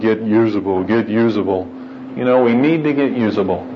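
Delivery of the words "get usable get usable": deep, booming heavenly voice. Retelling a story where a voice from above answers a praying man, deep voice from above. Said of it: "you hear this deep voice from up above".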